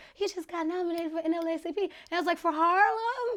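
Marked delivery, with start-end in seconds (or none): 0.2-1.8 put-on cutesy, babyish little baby voice. Retelling how the speaker's mom announced the nomination, imitating a little baby voice. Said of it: "She has a little baby voice".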